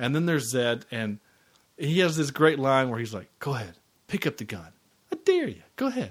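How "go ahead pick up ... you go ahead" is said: animated film-star voice with widely swooping pitch. Recapping a movie scene, the speaker delivers a character's line as a Bruce Willis impression. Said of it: "in that typical Bruce Willis voice that he does".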